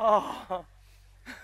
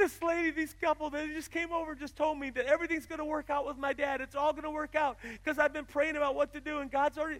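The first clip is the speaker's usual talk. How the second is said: put-on high, tearful crying speech; 5 semitones higher than usual. Retelling what a girl said to her dad, imitating someone crying. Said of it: "Riley's crying".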